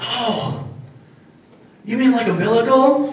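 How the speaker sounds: tiny, high, soft little voice. Retelling a remark from someone at the back of the class, in a little teeny voice. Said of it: "This little teeny voice".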